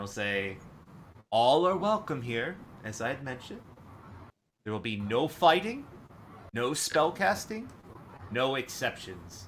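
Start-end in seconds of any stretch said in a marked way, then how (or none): 1.3-9.5 very stern, no-nonsense, with raised pitch. The game master voices Mahadi as the players walk away, very stern. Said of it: "very sternly".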